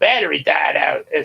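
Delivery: ordinary delivery, nothing marked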